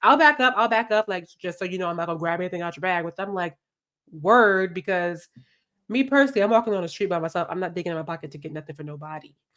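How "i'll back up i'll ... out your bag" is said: ordinary delivery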